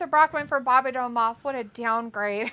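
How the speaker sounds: ordinary delivery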